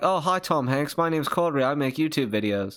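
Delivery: put-on British-sounding accent. Acting out the friend meeting Tom Hanks: imitating Corey, sounds British. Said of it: "It sounds British".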